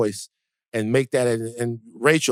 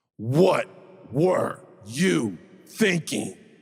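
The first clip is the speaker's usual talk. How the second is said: harsh, stern put-on voice; 2 semitones higher than usual. Asked by the other speaker to do the voice, the speaker answers in a harsh voice. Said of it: "That's like a that's like a like a harsh voice".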